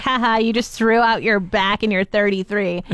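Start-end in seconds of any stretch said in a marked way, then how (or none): none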